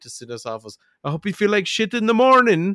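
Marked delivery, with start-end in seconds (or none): 1.0-2.8 put-on Irish accent, higher, louder. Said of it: "enough Irish that I can do that accent".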